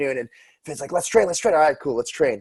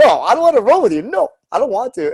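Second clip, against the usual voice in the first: put-on childlike voice, higher and louder; 8 semitones higher, 5 dB louder than usual. Retelling a refusal to roll on the mat, imitating Vinny sounding like a kid. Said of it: "which was like a kid".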